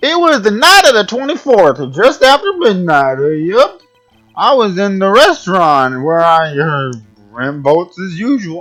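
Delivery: put-on drunken speech. A witness giving testimony in court, in a drunk voice. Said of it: "so I gave him a drunk voice".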